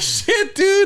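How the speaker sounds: put-on very high, loud, panicked, laughing child squeal.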